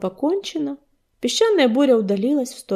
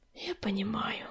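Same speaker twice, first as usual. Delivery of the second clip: hushed, barely audible, very quiet whisper; 15 dB quieter than usual. Answering an apprentice who will now be left alone, whispering. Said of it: "прошептал Огнезвезд".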